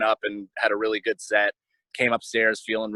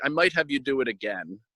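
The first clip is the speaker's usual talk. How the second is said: put-on English spoken with an Israeli accent; 4 semitones higher than usual. Retelling what Esty said when she came over and sat down, in Esty's Israeli accent. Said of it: "in her Israeli accent".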